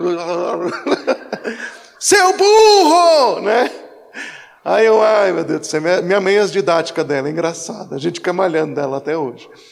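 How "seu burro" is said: high, loud, drawn-out yell. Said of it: "aquela goelinha da minha mãe mexendo".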